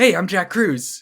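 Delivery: high, loud, belted movie-star voice. Answering what Tom Cruise's brother sounds like: Jack Cruz voice. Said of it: "He sounds exactly the same".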